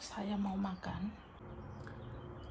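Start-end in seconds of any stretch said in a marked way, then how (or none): 0.0-1.3 quiet whisper. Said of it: "Ngomong pelan-pelan".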